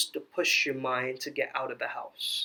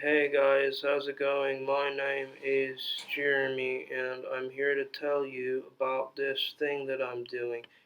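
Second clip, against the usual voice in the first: slow, dead-level, completely monotone droning delivery. Imitating how clients introduce themselves, in a completely monotone delivery. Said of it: "You're completely monotone".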